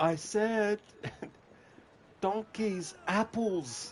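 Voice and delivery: play-acted, very high, very slow, desperate pleading. Recounting a character who grows desperate the longer you wait, imitating a desperate plea. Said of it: "the desperation in his voice".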